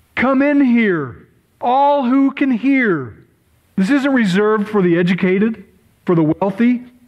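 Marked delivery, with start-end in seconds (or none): 0.2-3.2 slow, drawn-out, far-carrying calling cry. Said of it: "she's screaming".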